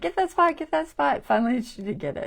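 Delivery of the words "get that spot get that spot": shrill, insistent, very high, loud, urgent yelling. Retelling yelling at a video of someone painting: imitating herself yelling.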